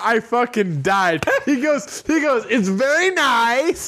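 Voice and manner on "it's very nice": put-on voice with the word nice drawn out long. Retelling a friend quoting Borat: Borat impression. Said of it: "It's Borat".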